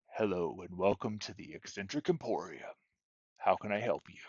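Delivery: very deep, hushed voice. Narrator voicing a shop owner greeting customers who walk in, very deep voice. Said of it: "he says to you in a very deep voice".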